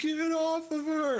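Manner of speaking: very high, wavering, shaky attempt at menace. A player's character charges at a man to get him off her, shaky, trying to sound intimidating. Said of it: "trying to be intimidating, but it's like a shaky voice".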